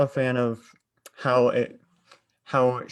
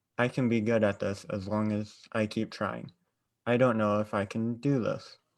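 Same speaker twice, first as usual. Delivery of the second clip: plain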